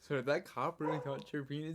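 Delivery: ordinary talk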